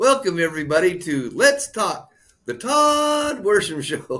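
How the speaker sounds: words broken by laughter. A host opening their own show after several takes, laughing while talking. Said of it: "I'm laughing because this is like my fifth take".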